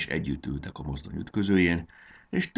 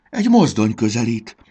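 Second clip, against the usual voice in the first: frantic, desperate cry, very loud and high; 5 semitones higher, 9 dB louder than usual. Narrator reads a railway car character hearing an engine approach, crying out desperately. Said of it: "kiáltotta kétségbe esetten".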